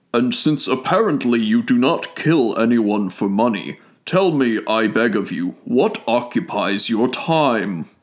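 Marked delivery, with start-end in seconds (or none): none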